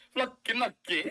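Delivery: put-on Italian accent. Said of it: "Can you say it in an Italian accent?".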